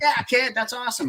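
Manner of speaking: pitched way up, teasing.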